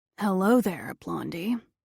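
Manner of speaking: rough, gravelly voice. The new contractor on the front steps greets the narrator, gravelly voice. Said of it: "he says in a gravelly voice".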